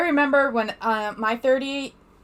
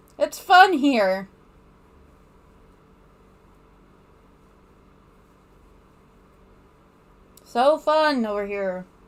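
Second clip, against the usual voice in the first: dry, clearly insincere sarcastic tone. Commenting on being here: sarcastic. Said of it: "I say sarcastically".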